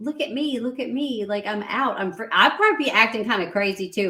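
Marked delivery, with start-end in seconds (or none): 0.0-2.0 put-on woman's voice, higher-pitched. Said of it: "she's just like".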